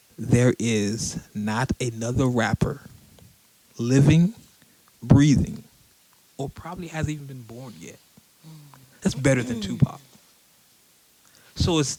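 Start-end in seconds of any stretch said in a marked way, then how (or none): 0.2-10.0 very slow, deliberate, every word drawn out. Answering commenters who say the speaker talks fast; as slow as possible. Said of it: "let me say this as slow as I possibly can".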